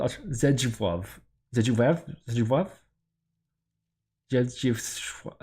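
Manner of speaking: struggling pronunciation, slowed down. Trying to pronounce a hard name aloud, speaking with braces in. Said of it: "I also have braces in at the moment, so that makes it real hard to get certain mouth movements in".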